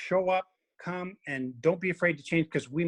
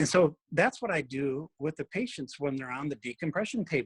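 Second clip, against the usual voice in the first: ordinary talk, nothing marked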